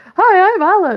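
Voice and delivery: high, loud squeal, done deliberately badly. Pretending to be Alan behind a cardboard cutout: bad Alan impression. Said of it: "just do a really bad impression of him".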